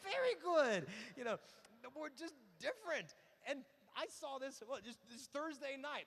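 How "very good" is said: high, slow, condescending mock tone. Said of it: "It's like".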